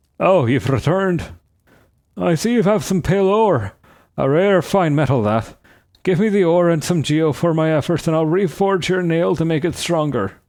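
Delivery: put-on old Irish man voice. Voicing a game character's lines aloud while playing: old Irish accent. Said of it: "I think I gave this guy like an old Irish accent".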